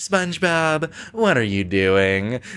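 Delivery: slow, very kind, unhurried voice. Retelling Squidward coming back to confront SpongeBob: Squidward in a very nice voice. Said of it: "just in a very nice voice".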